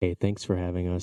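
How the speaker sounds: calm, even public radio host voice.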